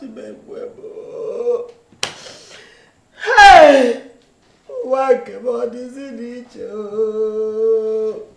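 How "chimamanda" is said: calling out while crying. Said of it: "Mama, why are you crying?".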